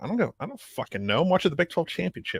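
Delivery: heavily sarcastic, dismissive tone. Retelling own reply to a buddy asking about Australia: retelling a sarcastic reply. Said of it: "I was so sarcastic".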